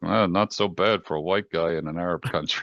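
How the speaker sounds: put-on, muttered under-breath remark. Retelling what a fellow agent said to him, imitating Amar muttering under breath. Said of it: "he says under his breath".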